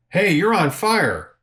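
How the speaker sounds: acted-out, high-pitched yell. Retelling a riding buddy's warning at a traffic light: imitating someone yelling. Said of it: "he yells at me".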